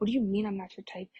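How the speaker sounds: acted angry man voice, mock-mad. Retelling how a man reacted to being told he's not their type, imitating an angry man. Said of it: "he gets really mad".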